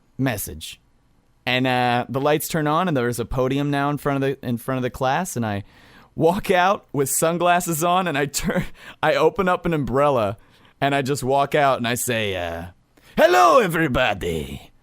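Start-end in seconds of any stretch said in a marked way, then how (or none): 13.2-14.6 swooping, sing-song vampire voice. Retelling walking out to greet a class from a podium: Dracula voice. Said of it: "Dracula voice".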